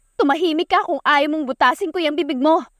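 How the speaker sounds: high, shouted voice. A woman shouts back at the man who yelled at her: shouting back. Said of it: "Sigaw niya pabalik".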